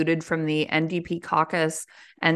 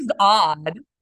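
ordinary talk

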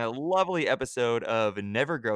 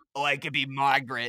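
put-on cat voice. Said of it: "This was my cat's voice".

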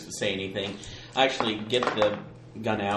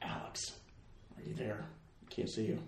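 hushed, very quiet, breathy, barely voiced whisper; 14 dB quieter than usual. As Mina in a group roleplay scene, searching for someone, whispering. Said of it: "just whispering".

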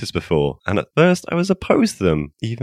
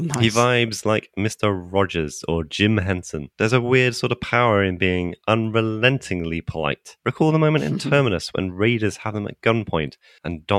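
plain

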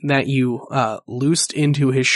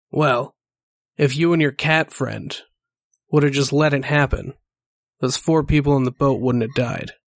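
gloating snake-man voice, spoken through a laugh. Voicing a grinning snake man who laughs and taunts the player: laughing snake man voice. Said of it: "and he just laughs, and he goes".

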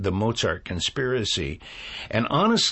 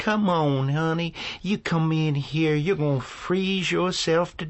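put-on, pitched-up New Orleans woman's accent; 7 semitones higher than usual. Demonstrating how you do somebody from New Orleans, speak in Miss Sugarberry's New Orleans accent. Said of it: "who's from New Orleans, and she says".

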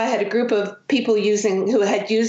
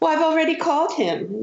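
put-on sulky, bratty teenager voice, pitched up; 8 semitones higher than usual. Retelling how she answered grandmother ayahuasca back, in a mock bratty teenager tone. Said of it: "you know how teenagers have that tone of voice".

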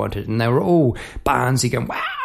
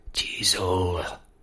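mock menacing voice, lower, quieter; 4 semitones lower, 6 dB quieter than usual. Retelling how a man looked back on his way out, the speaker quotes him mock-menacingly.

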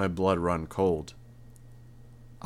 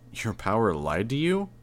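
ordinary delivery

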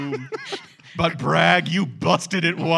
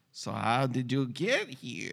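low put-on voice with swooping pitch; 4 semitones lower, 9 dB quieter than usual. Retelling a line by the character Dr. Niss: William Hickey impression. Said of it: "It's my best William Hickey".

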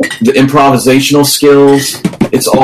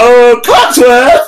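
very high call from a distance; 11 semitones higher than usual. Imagining the host calling his butler from the back: imitating Phil. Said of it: "Phil from the back go".

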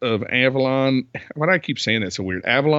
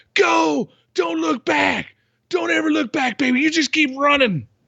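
mock, very high, slow, drawn-out scream. Retelling a character telling her to run: imitating a scream. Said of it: "like, screams it".

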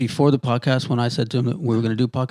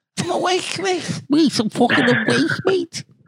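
put-on full Scouse accent, much higher. Mocking a man trying to sound awake, in a full scouse accent. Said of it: "You went full Scouser on us".

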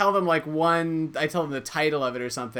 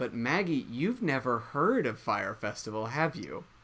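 condescending, patronizing, talking-down tone; 2 semitones lower, 6 dB quieter than usual. Asking the other speaker a question in front of listeners: patronizing tone. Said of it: "You just said that in a really patronizing way".

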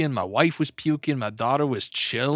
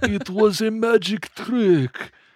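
put-on very slow, drawn-out old Slavic accent; 8 semitones higher, 4 dB louder than usual. Joking that the Easter Bunny explains his return: old Slavic Easter Bunny voice. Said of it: "He's got, like, an old Slavic voice".

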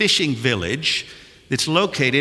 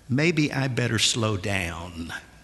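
low, slow half-whisper out the side of the mouth; 4 semitones lower, 4 dB quieter than usual. Retelling what a man suddenly said to the speaker: near-half-whisper from mouth corner. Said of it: "almost in a whisper out the corner of his mouth".

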